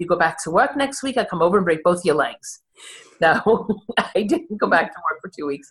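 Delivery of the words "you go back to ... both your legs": plain New York way of talking. Retelling what a friend said while leaning over the bed, in Phil's New York accent. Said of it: "says in his New York accent".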